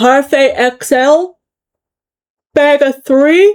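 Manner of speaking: slow, words stretched out by a yawn. Listing items for sale to an audience while she cannot stop yawning. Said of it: "I'm yawning and I cannot stop".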